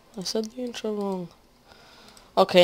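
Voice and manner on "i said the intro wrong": soft, low-volume muttering. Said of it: "now I'm just talking low".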